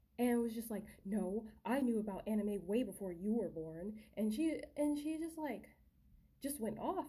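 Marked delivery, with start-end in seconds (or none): 1.1-3.5 put-on angry voice. Retelling another person's reply during an argument about anime, imitating someone angry. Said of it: "she got really angry at me".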